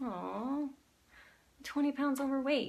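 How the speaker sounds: sorrowful, downcast, sad, slightly high voice. Demonstrating saying a complaint in different voices, this time in a sad voice. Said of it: "Say it as sad".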